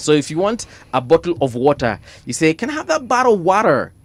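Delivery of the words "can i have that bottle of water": very high, put-on local accent held throughout. Speaker explains how to ask for water so locals understand: imitating the locals' accent. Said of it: "you have got to learn their accent".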